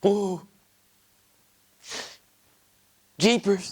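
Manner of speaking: acting scared, performing fright. Auditioning for a horror movie, asked for his best scared impression, the actor is acting scared. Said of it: "give me your best scared impression now".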